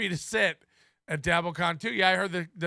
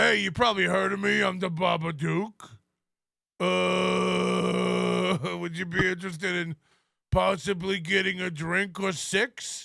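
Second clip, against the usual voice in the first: sneering, mocking come-on, long drawn-out "uh". Mocking someone's messages to women, as the Babadook: mocking imitation of the Babadook. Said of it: "you're D Ming about getting some drinks with the Babadook".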